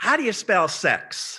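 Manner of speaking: high-pitched stage whisper. Retelling a boy asking his mother a question, imitating a stage whisper. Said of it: "kind of in a stage whisper".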